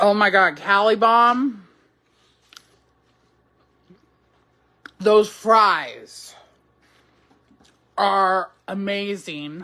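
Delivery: speaking with mouth full of food. Tasting fries with sour cream and cheese, talking with mouth full. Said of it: "speaking with food in my mouth".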